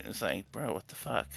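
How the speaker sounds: very quiet, hushed half-whisper. Narrating a scene, voicing a character who leans in close and half-whispers to another. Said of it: "he whispers to uh Garen".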